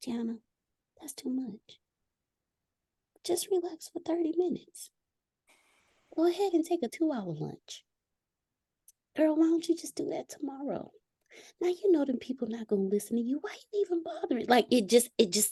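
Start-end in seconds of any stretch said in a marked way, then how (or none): 0.0-14.5 small, tiny, high little voice. Acting out the self-sabotaging voice that talks in the speaker's ear, in a little small voice. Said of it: "little small voice like".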